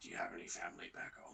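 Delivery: barely audible, very quiet, very low hushed half-whisper. Retelling what someone half-whispered to the listener: half-whispering. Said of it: "Cole just whispers to you".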